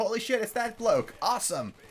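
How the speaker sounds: high, excited, blurted-out exclamation. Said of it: "I was like".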